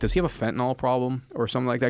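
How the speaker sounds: ordinary delivery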